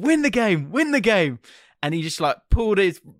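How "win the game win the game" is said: play-acted high, urgent cheering shout. Retelling what they shouted at a player during a match: retelling a shout. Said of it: "I just shouted".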